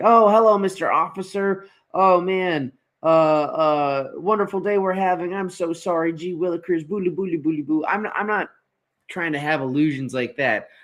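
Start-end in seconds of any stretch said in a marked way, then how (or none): 0.0-7.8 acted, overly polite, meek, humble, with drawn-out "uh". Imitating Tiger greeting a police officer: Tiger as overly humble and polite. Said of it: "comes out and he's just like".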